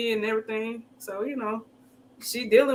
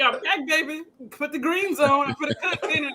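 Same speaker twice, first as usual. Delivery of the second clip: put-on convincing grandma voice; 4 semitones higher than usual. Retelling a cousin's voicemail messages after grandma passed: imitating grandma's voice. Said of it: "he did the voice so well".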